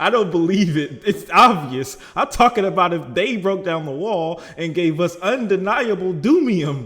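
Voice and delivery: sudden loud shouting. Speculating with companions about an emergency, in a suddenly raised voice. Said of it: "don't suddenly raise your voice like that".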